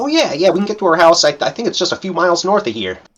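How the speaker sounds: high, loud, hurried, eager goblin voice. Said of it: "Scrock's like".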